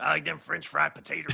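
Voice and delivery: creaky, rough character voice. Trading movie impressions, doing a Sling Blade impression again. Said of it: "I'm going to do Sling Blade again".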